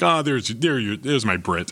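plain

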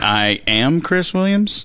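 pompous anchorman voice, very slow. Tell a fellow speaker how you pictured him introducing himself, in a Ron Burgundy voice. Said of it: "like Ron Burgundy there going".

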